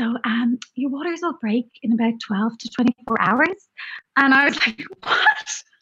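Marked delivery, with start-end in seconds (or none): 0.0-3.7 the sweetest, syrupy, sugary-sweet delivery. Recalling what she said as the speaker left a session: mimicking a very sweet tone. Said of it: "in the like sweetest tone".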